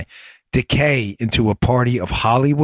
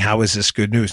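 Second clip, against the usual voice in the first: normal talking voice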